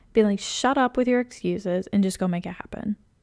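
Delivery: ordinary talk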